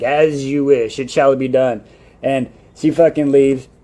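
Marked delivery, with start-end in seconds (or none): 0.0-1.8 slow, ominous, a touch more sinister. Retelling a character agreeing to carry out a plan: put-on sinister tone. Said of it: "she says it a little more sinister".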